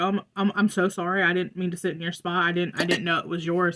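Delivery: put-on apologetic tone. Retelling own apology to someone upset over a seat: imitating own apologetic tone. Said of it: "I was very, like, apologetic".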